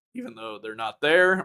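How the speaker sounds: voice cracking and breaking mid-line. Host introducing who is joining this week, voice cracking. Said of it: "my voice cracked".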